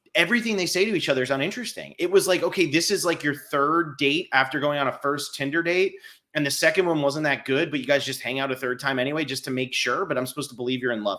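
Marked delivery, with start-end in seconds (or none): none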